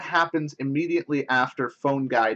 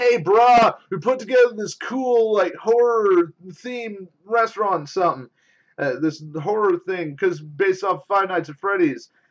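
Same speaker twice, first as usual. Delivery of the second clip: laid-back, pitched-up surfer dude voice; 6 semitones higher, 4 dB louder than usual. Describing a game's new character, the speaker imitates him: surfer dude voice. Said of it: "sounds sort of like a uh, like like a surfer dude's like".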